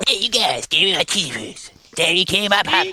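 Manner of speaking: bouncy, high, swooping put-on cartoon voice. Showing how a wrestler impression slid toward Cartman: Cartman voice. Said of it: "I started talking like Cartman almost".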